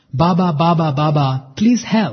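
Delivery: put-on eager, excited English accent. Recounting calling out to Baba while visualizing his room, retelling excited English-accent plea. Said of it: "in my very excited English accent".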